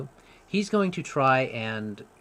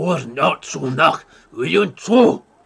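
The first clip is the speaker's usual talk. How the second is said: commanding, authoritative giant voice, much louder; 3 semitones higher, 11 dB louder than usual. Voicing a giant the listeners overhear, use a commanding giant voice. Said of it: "you can tell it was a commanding voice".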